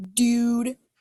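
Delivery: Southern California surfer-dude accent. Giving slide examples of regional talk, southern California coast: surfer talk. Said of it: "kinda got surfer talk".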